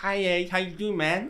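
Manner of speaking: speaking with a put-on lisp. Imagining a first date with a lisping girl: Mike Tyson lisp impression. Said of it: "like Mike Tyson".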